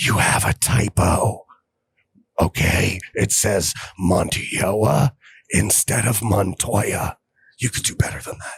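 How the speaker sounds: slow, joking stage whisper. Pointing out a typo on screen as a joke: joking stage whisper. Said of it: "so I'm gonna whisper so none of you can hear this".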